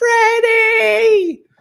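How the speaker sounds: very high, stretched-out, long-held scream. Retelling how a mother yelled for her missing card: imitating mom screaming. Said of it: "the screams for Freddie".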